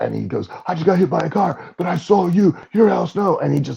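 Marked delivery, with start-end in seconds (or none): 0.7-3.4 imitated excited kid freaking out, higher. Retelling how a kid ran up recognizing Al Snow: imitating a kid freaking out. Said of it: "And he was freaking out".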